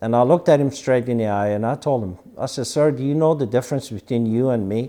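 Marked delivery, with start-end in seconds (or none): none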